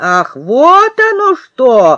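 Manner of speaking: slow, angry, threatening, menacing exclamation. Narrator reads Kolya's grandmother replying to the children, menacingly. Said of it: "грозно сказала она".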